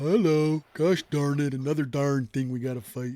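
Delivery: put-on gloomy character voice. Voicing Stu during a fight after forgetting the voice: Stu voice. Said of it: "I forgot my Stu voice".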